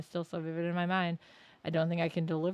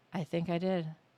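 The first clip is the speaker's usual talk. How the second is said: somber funeral-like tone. Answering whether the departed was saved, sounding like at a funeral. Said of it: "why do you sound like you're at a funeral".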